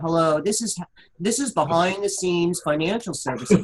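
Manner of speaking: lifeless, dull, boring business-phone voice. Urging someone to sound excited on the phone, imitating Hal's boring greeting. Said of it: "do you know how boring you sound?".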